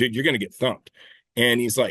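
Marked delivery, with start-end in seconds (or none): 0.0-0.9 angry, pissed-off tone with the pitch raised. Retelling own reply after being told off while shooting: retelling own angry words. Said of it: "I was, like, pissed".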